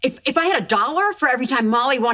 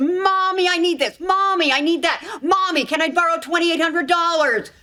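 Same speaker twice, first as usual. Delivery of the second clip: mocking needy voice, higher pitch; 4 semitones higher than usual. Complaining about her daughters' requests, imitating her daughters asking. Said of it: "All I hear is".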